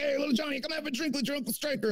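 high, pushy, coaxing, overbearing tone. Retelling a barbecue where someone urged a kid to drink: imitating Striker. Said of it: "he's like".

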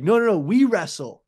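put-on broken pidgin English. Showing how Daniel Cormier talks to Dagestani fighters: imitating Daniel Cormier's pidgin English. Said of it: "he just speaks".

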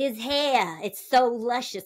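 faux, over-the-top New York accent, drawn out. Quoting a line from the person testing for Che: imitating overdone New York accent. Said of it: "overdone New York accent from the person".

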